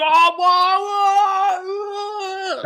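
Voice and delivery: mock excited gasps, very high, very slow, drawn-out. Retelling reacting while watching on telly: imitating own excited reactions. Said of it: "like this".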